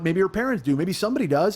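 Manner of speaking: ordinary talk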